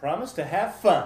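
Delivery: high, loud yelling. Repeating an oath line after the other speaker, yelling. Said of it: "You are yelling, at least at that last part".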